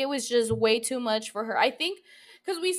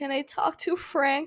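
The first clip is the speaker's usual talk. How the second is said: mock breaking voice, pitched higher; 2 semitones higher than usual. Retelling a phone caller asking to speak to someone, imitating a breaking voice. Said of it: "And her voice breaks".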